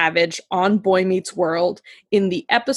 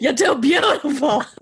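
put-on New York accent, higher pitch; 7 semitones higher than usual. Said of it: "so that's my Leah Remini".

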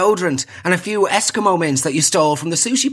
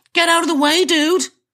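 cheeky, very high-pitched put-on American accent; 11 semitones higher than usual. Repeating what a cheeky eleven-year-old cyclist said, imitating kid's american accent. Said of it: "he says in his inexplicably American accent".

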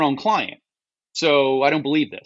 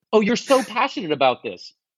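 mock-condescending, put-on condescending tone; 5 semitones higher than usual. Giving startup advice, quoting what people say, mock-condescending voice. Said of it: "in a condescending voice".

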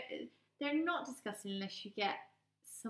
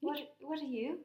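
practised, put-on, pitched-up Irish accent; 5 semitones higher than usual. Joining in showing how Irish people sound: put-on Irish accent. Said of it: "I practice my Irish accent a lot".

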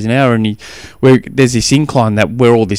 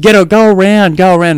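mock loud, high-pitched yelling; 8 semitones higher, 5 dB louder than usual. Retelling calling out to a son stuck behind a rider: retelling a yell. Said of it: "And I'm yelling out".

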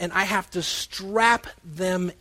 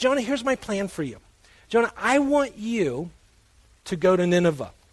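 kindly, very gentle, mild calling voice. Acting out God speaking to Jonah, in a very gentle voice. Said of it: "with what I'm going to call a very gentle voice".

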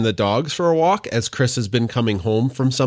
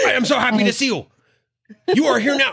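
very high, overjoyed, happy dog-voice yelling; 12 semitones higher than usual. Voicing a dog greeting people who come into the house: imitating a dog's happy yelling. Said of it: "he just yells".

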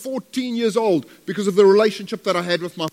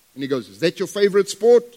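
plain

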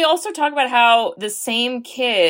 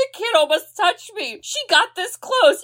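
put-on monster sobbing, higher; 10 semitones higher than usual. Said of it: "he starts crying".

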